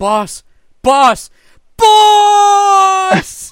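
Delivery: loud rising yell. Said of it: "Kinsey is yelling".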